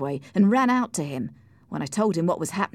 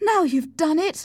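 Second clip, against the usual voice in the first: cry pitched very high; 11 semitones higher, 3 dB louder than usual. Reading a character right after one man struck another; cried out. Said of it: "cried Cathy".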